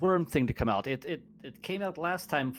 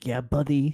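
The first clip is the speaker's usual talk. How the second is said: whispering; 2 semitones lower, 6 dB louder than usual. Speaking in character while the party moves in stealth: whispering. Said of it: "I'm going to whisper".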